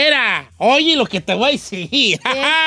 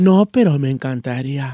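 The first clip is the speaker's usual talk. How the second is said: teasing, flirtatious, suggestive tone; 10 semitones lower than usual. Showing friends how to answer a tough guy: flirtatious suggestive tone. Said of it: "Así, con ese tono".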